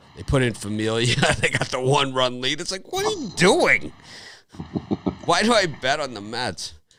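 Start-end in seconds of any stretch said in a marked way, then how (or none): 2.9-6.7 high, swooping, hollering yell. Recalling a lost Mets bet and yelling at the TV: retelling yelling at the TV. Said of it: "I'm like yelling at the TV".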